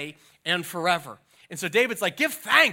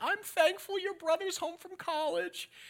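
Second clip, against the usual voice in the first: very high, soft, teary, sentimental weepy voice; 11 semitones higher, 8 dB quieter than usual. Retelling a family Thanksgiving tradition, quoting mom: imitating mom a little weepy. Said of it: "my mom would get a little bit weepy".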